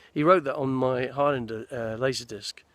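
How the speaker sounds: ordinary delivery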